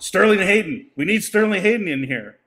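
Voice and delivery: put-on loud yell. Retelling how he yelled at a famous casting person: acting out a yell. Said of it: "he yells at this woman".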